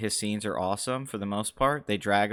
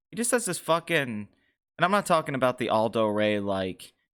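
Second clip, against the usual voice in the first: ordinary talk, nothing marked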